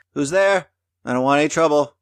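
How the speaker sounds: woman's very high, calling shout. Narrating a knock at a door, the speaker voices the one inside: woman shouting from inside. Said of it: "you hear a female voice shout from within".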